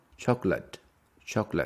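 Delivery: first syllable CHOC stressed in chocolate. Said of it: "the stress is on the first one".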